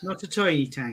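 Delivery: silly put-on Irish accent. Joking with others about tiny model tanks: put-on Irish accent. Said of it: "Why have you got to say that in an Irish accent?".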